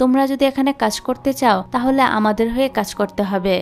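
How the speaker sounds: ordinary delivery, nothing marked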